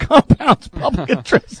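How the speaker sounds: high, slow voice, laughing through the words.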